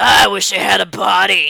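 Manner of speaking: put-on very slow, drawn-out, creaky, raspy old hag voice. Retelling what a figure in the story says, in a sea hag voice. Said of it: "I'll just use like the sea hag voice".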